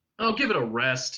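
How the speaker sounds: usual speaking voice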